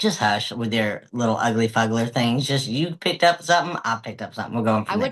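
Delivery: plain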